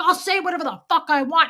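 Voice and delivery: high, fast, loud mock scream. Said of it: "he was screaming".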